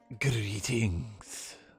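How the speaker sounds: spooky, sinister, creepy and eerie voice. Answering a phone call, greet the caller in a creepy voice. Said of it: "Why do you sound so creepy?".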